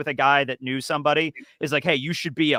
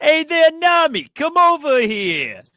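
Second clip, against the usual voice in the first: put-on loud, high, laid-on Brooklyn accent; 13 semitones higher, 7 dB louder than usual. Talking about anime, the speaker does a Brooklyn Sanji impression. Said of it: "That's not how he talked".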